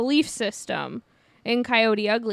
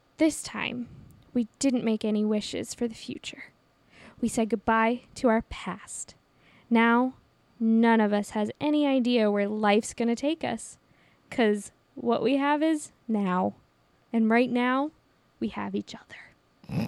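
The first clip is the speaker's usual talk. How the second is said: bad, dramatic, monologue-style reading. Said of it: "That's my [name] impression".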